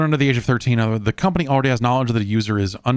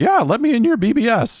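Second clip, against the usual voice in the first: very high, cracking, breaking adolescent voice; 13 semitones higher, 3 dB louder than usual. Retelling calling a BBS as a fifteen-year-old: imitating own voice cracking as a teen. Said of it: "a voice cracking fifteen-year-old going like".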